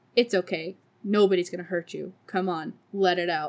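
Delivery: flat, dead-level monotone voice with no inflection anywhere. Retelling how a policewoman spoke to a harassment victim: monotone policewoman voice. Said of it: "who just so monotone goes".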